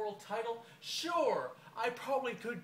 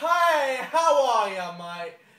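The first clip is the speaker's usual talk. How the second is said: very loud, booming, slow, drawn-out and big; 3 semitones higher, 13 dB louder than usual. Comparing polite British people to the crocodile hunter: crocodile hunter impression. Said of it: "It's like the crocodile hunter".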